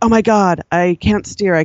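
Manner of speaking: mock panicked, freaked-out exclamation. Retelling her steering failing out on the trails, retelling freaking out. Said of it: "you can hear me freaking out on the trails going".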